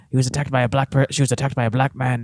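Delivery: imitated Irish accent. Retelling what he said on a press tour, after being asked to do the voice: imitating an irish accent. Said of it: "But it He's Irish, though".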